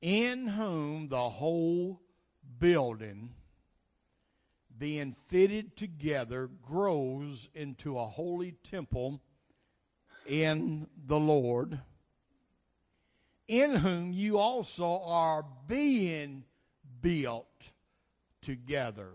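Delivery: reading aloud slowly, unhurried. Reading Ephesians chapter 2 aloud to listeners, reading slowly. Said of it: "I'm going to read these slow".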